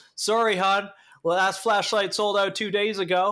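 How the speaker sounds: put-on Southern Georgia accent. Retelling a lady at the store answering a customer about flashlights, in a Georgia accent. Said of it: "she sounded like she was from Georgia?".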